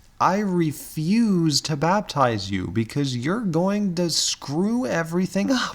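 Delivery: sarcastic, exasperated delivery. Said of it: "that's being facetious".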